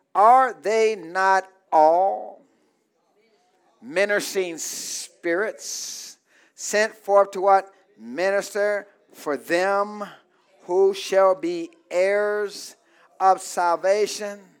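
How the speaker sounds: slow, stretched-out reading voice.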